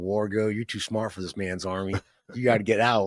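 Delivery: put-on spoken with a South Carolina accent. Retelling what his officer told him, in a South Carolina accent. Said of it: "with his Southern Cal- Southern Carolina accent".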